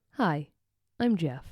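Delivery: gentle, calm, soothing meditation-app narrator voice. Doing an impression of Jeff from Calm when asked: Jeff impression. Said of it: "give me your best Jeff impression".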